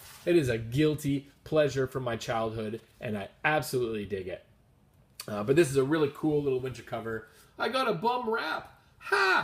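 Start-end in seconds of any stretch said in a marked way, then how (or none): 7.6-9.4 high-pitched character voice, very slow and drawn out. Describing a comic's cover, doing a quick Alf impression. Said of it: "That's my Alf impression".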